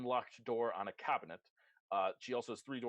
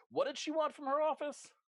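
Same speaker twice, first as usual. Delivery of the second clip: very high, loud shouted call; 4 dB louder than usual. A guard outside shouts back over his shoulder: guard shouting. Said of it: "she called for just shouting like".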